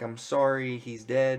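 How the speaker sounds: normal talking voice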